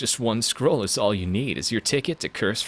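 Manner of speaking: brash, swaggering, cocky, self-assured delivery. Demonstrating another way to read the same line: cocky delivery. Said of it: "Or if it's more cocky".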